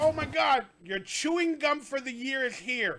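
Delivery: slow talking while cracking up. Reacting to a clip while watching it: laughing while talking. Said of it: "I'm laughing too much".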